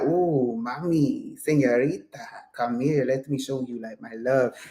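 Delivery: low, put-on seductive lover voice. Speaker describes the vibe they are getting, in a Latin lover voice. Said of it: "but I'm getting Latin lover".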